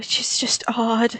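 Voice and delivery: soft, unvoiced, whispered aside.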